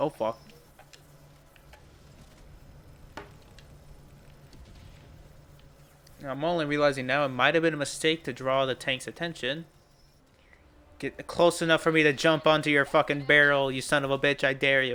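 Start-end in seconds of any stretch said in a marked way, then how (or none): 0.0-9.7 whispered, hushed, rueful and resigned regret. Playing a game and spotting a tank, resigned regret. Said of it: "(with resigned regret)".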